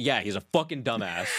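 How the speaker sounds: exasperated, pissed-off, half laughing put-down. Recounting what he said after they walked away, imitating someone pissed off. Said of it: "he was so pissed".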